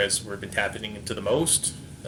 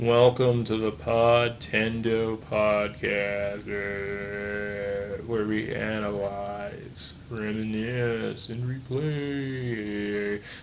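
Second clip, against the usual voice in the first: put-on zombie voice, very slow. Podcast host opens the show: zombie voice. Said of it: "That was my zombie voice".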